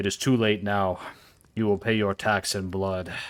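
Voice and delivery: pompous, threatening, menacing giant voice. A game master voices a giant who has just knocked a player's character flying, giant's voice. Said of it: "this large giant he's a giant, so he stops and his mount stands up straight and he says, "Oi, I am the Lord of the North. / this large giant he's a giant, so he stops and his mount stands up straight".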